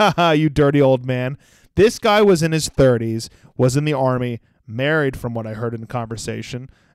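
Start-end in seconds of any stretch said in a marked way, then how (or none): none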